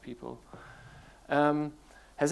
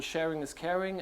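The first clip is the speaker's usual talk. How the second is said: ordinary delivery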